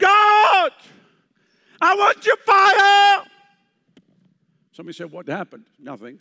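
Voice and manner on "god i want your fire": very high, very loud, slow, drawn-out desperate shout. Retelling crying out to god in desperation, retelling a desperate shout. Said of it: "I started shouting at the top of my voice".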